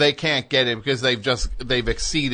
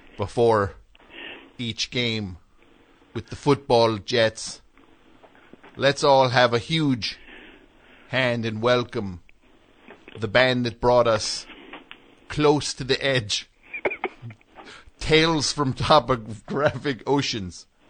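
formal, ceremonial presenter delivery. Doing a requested impression of a football legend inducting a band: Joe Namath impression. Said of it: "do an impression of if Joe Namath".

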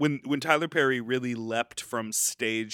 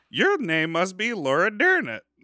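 put-on loud, boppy, big-swooping old Southern lady voice; 8 semitones higher, 7 dB louder than usual. Imagining a drag-club scene for another speaker, doing a Madea impression. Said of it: "Was that a good Madea impression".

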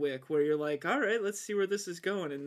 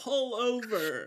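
yelled, pitched up and stretched out; 5 semitones higher than usual. Retelling how a guy in a smaller plane yells out the window, retelling a yell. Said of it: "he's yelling out the window".

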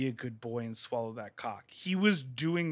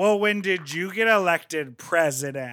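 put-on, very loud, sloppy drunken slur; 4 semitones higher, 10 dB louder than usual. Retelling a queen's comeback after being told she was loud: imitating a drunk queen. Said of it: "she sort of drunkenly was like".

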